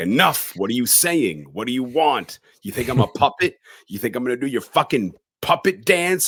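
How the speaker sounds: high, panicked, defiant, freaked-out outburst. Retelling a scene, speaker voices a character jumping out of bed: retelling a freaked-out outburst. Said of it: "freaked out".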